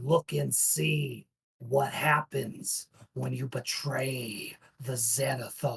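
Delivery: slow, menacing, contemptuous voice dripping with malice. Narrating a game, voicing a floating creature, loud, threatening, malicious voice. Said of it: "It is threatening, dripping with malice and contempt".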